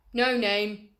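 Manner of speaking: big hearty voice. A pig replies to a spider's question, in a big hearty voice. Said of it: "he said in a big hearty voice".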